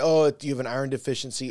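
normal talking voice

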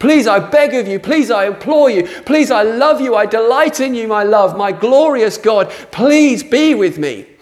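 passionate, high, full-hearted shouting. Praying aloud to God, shouting. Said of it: "I'm shouting a lot".

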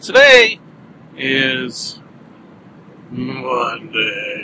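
descending scale ending on Monday. Speaker announces the day of the week: pitch steps down across phrase. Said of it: "I like to say that sort of on a descending scale. ... Sort of thusly".

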